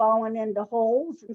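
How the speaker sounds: ordinary delivery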